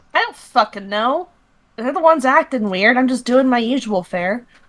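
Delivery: rude, snappy tone at full volume. In an improvised scene, answering the father who scolds her, rude, snappy tone. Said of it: "Don't you talk with me in that fucking tone".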